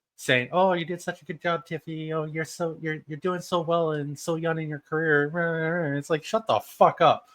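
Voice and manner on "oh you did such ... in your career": put-on condescending, patronizing, talking-down tone. Retelling a wrestling interaction, mocking Jade Cargill: condescending Jade Cargill impression. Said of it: "it was so condescending".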